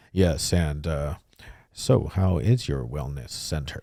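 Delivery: put-on deep voice. Recalling stiff early recordings, imitating how Shane talked on the microphone: deep voice. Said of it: "Shane would talk like really deep on the microphone".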